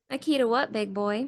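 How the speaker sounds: laid-on southern drawl voice. Player asked to answer in character voice, Dina's southern drawl. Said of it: "I am gonna need that in a character voice".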